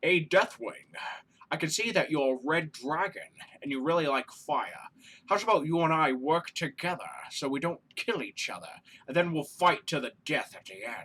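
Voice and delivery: bad, low, put-on Scottish film-star voice. Play Draco proposing a team-up to Deathwing, in a terrible Sean Connery impression. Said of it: "That's a terrible Sean Connery impression".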